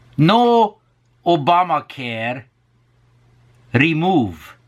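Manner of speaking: high-pitched, sing-song, put-on Hungarian accent.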